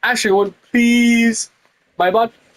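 pleading voice. Told to say it more beggingly, the speaker repeats the plea, begging. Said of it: "You have to say it more beggingly".

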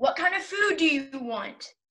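mild, restrained shouty yell. In a back-and-forth about food, asking the other what they want, yelling. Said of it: "Why are you yelling?".

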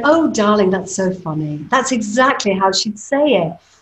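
mock effusive, theatrical, fawning gushing voice. Retelling how the other actors reacted in rehearsal: imitating the other actors. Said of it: "all the other actors in the room were going".

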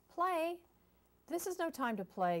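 very high, loud yell. A duck yells at a little bluebird who just asked to play. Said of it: "yelled Duck".

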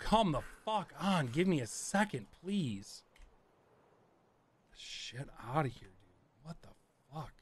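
exasperated, frustrated, fed-up, at wit's end. Playing Tarkov and venting at the game, frustrated. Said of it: "I'm just so frustrated right now".

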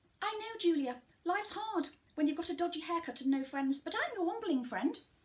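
high talking toy voice. Quoting what a pull-cord talking toy used to say: imitating Wellington Womble toy. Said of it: "Or he would say".

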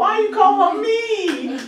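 very high, drawn-out, whiny voice. A teacher shows a student how they said it, imitating a student's whine. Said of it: "Just like that. That's how you said that".

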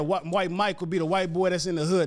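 ordinary talk, nothing marked

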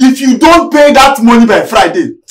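loud shouting.

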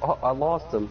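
normal talking voice

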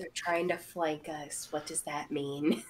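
half-whispered, very quiet, barely audible. Playing a character who half-whispers a warning to an ally: half-whispering. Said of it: "Patient's gonna whisper that back to Tarsius".

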